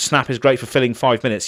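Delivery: ordinary delivery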